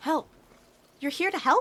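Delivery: very high, tiny woodland pixie voice. Voicing a tiny pixie who answers the players: tiny pixie voice. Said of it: "And they just kinda".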